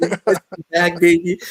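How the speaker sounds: gleeful, gloating high voice.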